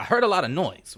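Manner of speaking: put-on mid-Atlantic accent. Quoting what she said to an officer, in a transatlantic accent. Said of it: "say this in that fucking transatlantic accent".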